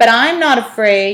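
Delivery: speaking up, very loud. Morton, not looking at Olive, answers her, with a raised voice. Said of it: "Morton raised his voice".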